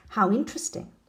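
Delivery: ordinary delivery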